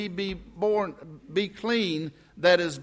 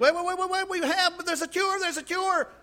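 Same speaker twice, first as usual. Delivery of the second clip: mock screaming, pitched much higher; 10 semitones higher than usual. Retelling how a doctor yelled at them as they ran away, imitating a doctor screaming. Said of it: "he's screaming, yelling at me".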